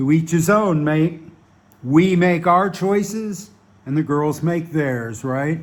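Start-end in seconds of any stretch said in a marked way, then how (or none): none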